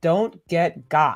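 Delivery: slow, deliberate, each word spaced out. Announcing an upcoming show's title, said slowly. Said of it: "I have to say that slow".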